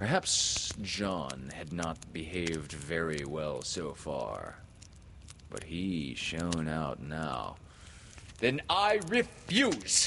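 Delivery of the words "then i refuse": very high, bold outcry. John, a captive of Hook, bangs the barrel in front of Hook: cried out. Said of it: "he cried".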